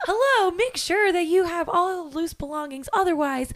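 very high, loud, showy game-show announcer voice. Describing the guy with the game showy voice, the speaker imitates his game-show host voice. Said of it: "he had a very game showy voice".

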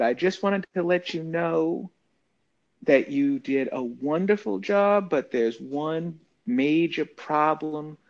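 put-on gentle, sweet, soft, buttery Southern accent. Retelling what she said after coming up to him, in a sweet soft Southern accent. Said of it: "sweet, soft, buttery Southern accent".

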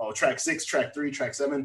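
normal talking voice

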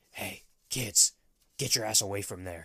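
eerie theatrical whisper. Retelling how a man bent into a bush and warned kids: imitating someone half-whispering. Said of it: "he starts whispering".

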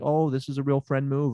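plain

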